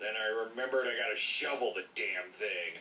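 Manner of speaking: put-on gruff, angry dad voice. Voicing Dad over a clip of a kid playing in snow, gruff and angry. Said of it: "using the gruff, angry voice for Dad?".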